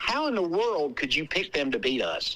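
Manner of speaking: put-on mutter under breath. Retelling what the opposing head coach said after the coin toss, muttered under his breath. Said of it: "kind of under his breath goes".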